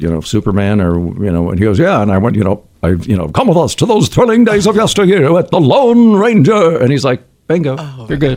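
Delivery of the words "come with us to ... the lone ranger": put-on dramatic old-time radio announcer voice. Asked to do something like the old radio dramas, Lone Ranger announcer voice. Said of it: "can you do something like the old radio dramas?".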